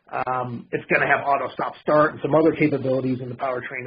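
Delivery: normal talking voice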